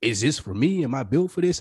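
plain

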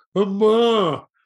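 loud, high, belted newborn-style wailing cry.

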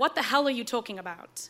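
ordinary talk, nothing marked

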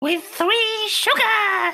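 very high, little puppet-style voice. Asked how they take their tea, answering in an Elmo voice. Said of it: "Using an Elmo voice".

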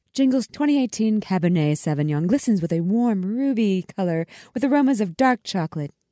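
put-on commercial-style announcer voiceover read. Reading a wine description, Hallmark announcer voice. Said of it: "I'll do my best Hallmark voice".

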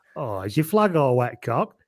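put-on very broad, laid-on thick Wigan accent. Retelling what a man said to the speaker about the flag: broadest Wigan accent. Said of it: "in his broadest Wigan accent".

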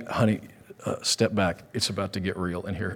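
put-on whisper. Retelling what was whispered to Maddie as demons were cast out: imitating own whisper. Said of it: "And I whispered to Maddie".

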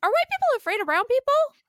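put-on very high, loud, bright, chipper kid voice. Retelling what their six-year-old son asked on the subway, imitating his chipper voice. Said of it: "in this very like chipper voice".

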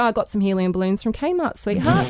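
ordinary talk, nothing marked

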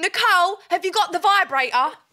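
brash, full-volume, confident scream, pitched high. Recounting walking into someone's room for a charger, retelling a confident scream. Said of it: "in the most confident, loud voice, I scream".

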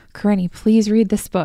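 loud, earnest, pleading, begging tone. Retelling how a brother pleaded in letters: imitating Jake begging. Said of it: "he begged me to read it".

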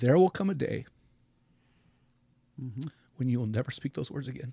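choked-up voice breaking and cracking with emotion. Sharing a last thought with a man, the speaker continues: choked up. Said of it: "I'm getting choked up".

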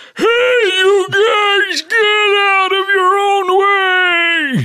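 put-on very high, very slow old-man voice. Answering what they'll sound like when old: put-on old man voice. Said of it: "I'm gonna sound like this".

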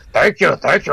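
big, goofy, high voice. Describing a film character's insane voice, imitating Kerim Bey. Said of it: "the guy's voice is insane too".

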